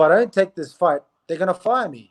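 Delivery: ordinary delivery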